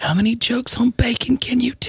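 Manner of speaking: high-pitched, whispered voice.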